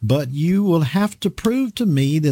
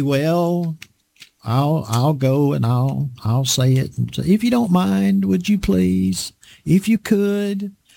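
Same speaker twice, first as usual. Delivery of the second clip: mock-timid, hesitant, pleading voice. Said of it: "That's not the way that God's word is to be said".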